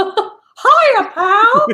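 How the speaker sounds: high-pitched cartoon mouse voice. Introducing a show's panelists, doing the Mickey Mouse impression again: Mickey Mouse impression. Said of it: "I just want to hear that Mickey impression again".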